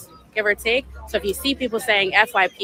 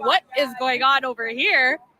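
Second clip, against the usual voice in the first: scared rat voice, alarmed, uneasy, high and slow; 5 semitones higher than usual. Imitating the rat's reaction again: imitating a scared rat. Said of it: "the rat was so scared".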